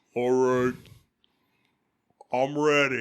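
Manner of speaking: deep voice. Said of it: "but it's a deeper voice saying".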